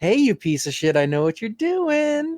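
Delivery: mock gloating with a grin in the voice, very high. Imitating the other speaker calling someone out: imitating a smug grinning tone. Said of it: "like a complete dick who was grinning".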